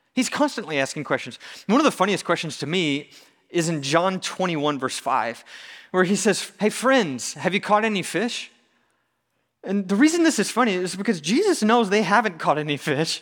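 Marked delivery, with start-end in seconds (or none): 6.6-8.5 bright, friendly, cheerful tone. Speaker quoting a Gospel verse aloud: acting out a friendly question. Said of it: "he sounds so friendly while he's asking them".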